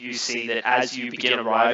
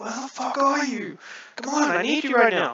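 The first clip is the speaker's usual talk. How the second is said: very high-pitched, calling yell; 13 semitones higher than usual. Retelling a character's call to a missing companion: retelling a yell. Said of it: "yell out to him and you're just like".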